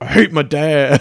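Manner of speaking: slow, affected, put-on Southern drawl. Retelling a scene where a character says he hates his dad: Southern accent. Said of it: "that Southern accent you just affected there".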